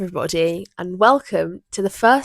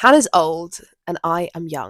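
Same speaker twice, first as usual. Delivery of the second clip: ordinary talk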